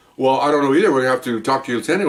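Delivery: ordinary talk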